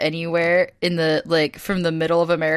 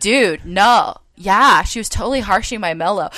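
louder put-on surfer dude voice; 3 semitones higher, 4 dB louder than usual. Retelling what a passenger on a plane said: imitating a surfer-type passenger. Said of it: "that guy behind me in the plane who was like".

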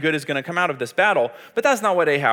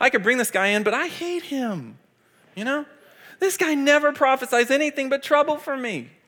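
play-acted, very high-pitched, petulant, whiny complaint; 9 semitones higher than usual. Discussing a Bible passage, acting out Ahab's words in a whiny voice. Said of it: "Ahab just had a whiny tone of voice".

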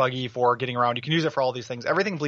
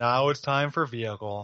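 put-on bored, dumb-sounding voice. Retelling a video's bit on level variety: imitating a bored dumb voice. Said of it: "doing it in the bored guy voice, like the dumb idiot voice".

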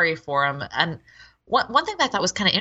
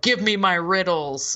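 mock petty tyrant voice, bossy. Retelling a character's demand for riddles: imitating a petty tin despot. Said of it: "he's like this petty tin despot that's like".

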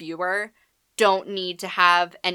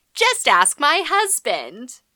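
mock saucy, cheeky, sing-song, high-pitched; 7 semitones higher than usual. Quoting a woman's remark to a grumpy man: mock-cheeky tone. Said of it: "in like a cheeky tone of voice".

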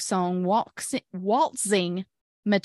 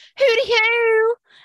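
very high, loud, flamboyant owl-like hoot; 13 semitones higher, 7 dB louder than usual. Retelling a friend answering an owl: imitating a flamboyant "hooty hoo". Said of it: "in the gayest way possible".

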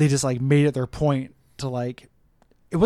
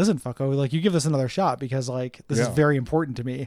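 normal talking voice

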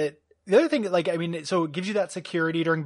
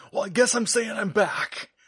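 weird, breathy movie-character impression, pitched higher; 5 semitones higher than usual. Show how he weirdly says that line in the third film, as a breathy John Wick impression. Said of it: "this weird breathy way he says that line".

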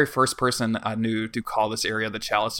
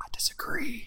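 hushed whisper through gritted, clenched teeth; 13 semitones higher, 7 dB quieter than usual. Biting their tongue about the boss, saying it through gritted teeth. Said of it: "through gritted teeth".

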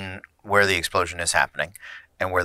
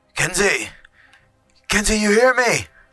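hoarse, raspy, very high-pitched shout; 14 semitones higher, 5 dB louder than usual. A game master voices a man yelling to kenzie as best he can, raspy yell. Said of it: "His voice is raspy".

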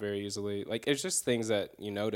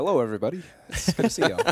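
put-on voice, higher and louder; 6 semitones higher, 10 dB louder than usual.

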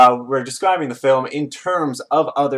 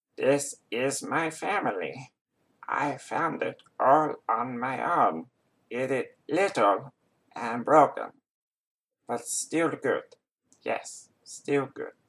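very hushed, soft cartoon alien creature voice; 9 dB quieter than usual. Trying an impression for a voice impression challenge; Stitch voice. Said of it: "that is my attempt at a Stitch voice".

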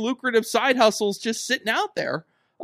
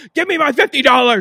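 booming, very loud shout; 4 semitones higher, 8 dB louder than usual. Imagining a cameo where the Great Khali yells at Riz: Great Khali yelling. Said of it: "the Great Khali just yells".

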